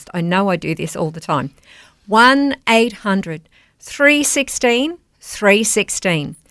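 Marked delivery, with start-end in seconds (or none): 2.1-6.3 at a slow pace. Speaker asking listeners to call and donate, said slowly. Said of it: "I'm going to say it slow".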